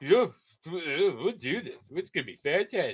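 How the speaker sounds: mock smug, overconfident, cocky, self-assured swagger. Mocking what a man in a video just said: imitating a cocky tone. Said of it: "he said it so, so cockily".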